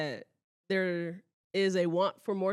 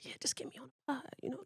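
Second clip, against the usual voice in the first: sneaky, fast, whispered aside. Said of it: "you coulda went through her and just say".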